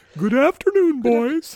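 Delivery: very high, very loud, shrill woman's voice. The speaker shows a less preferred voice for a figure: Monty Python woman's voice. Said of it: "a Monty Python woman's voice".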